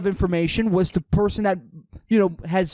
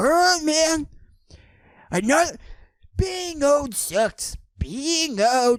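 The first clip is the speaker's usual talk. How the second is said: put-on impression voice, pitched much higher; 7 semitones higher than usual. Speaker retells what he says to people, practicing an impression voice. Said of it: "I lost it".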